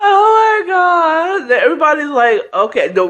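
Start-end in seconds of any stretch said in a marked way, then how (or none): 0.0-1.5 mock, high, words broken up by laughing bursts. Retelling how Toy reacted when asked if everything was all right, imitating someone laughing. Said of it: "Toy just broke out in laughter like".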